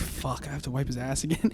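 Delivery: mock put-upon, fed-up, disdainful tone. Retelling a mother's face when called to wipe again: imitating mom's disdain. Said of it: "the disdain of being like".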